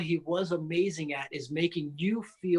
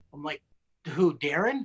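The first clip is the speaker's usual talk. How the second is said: normal talking voice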